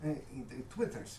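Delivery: speaking with Russian accent.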